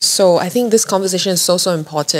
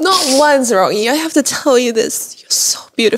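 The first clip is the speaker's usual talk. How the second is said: overcome, emotional, pitched-up heartfelt outpouring; 6 semitones higher than usual. Speaking to rocky during an episode, emotional. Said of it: "I'm so emotional this episode".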